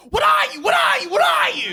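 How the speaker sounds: loud, shrill, very high, relentless repeated yelling. Retelling an old lady at a restaurant counter: imitating someone yelling. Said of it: "just starts yelling at me".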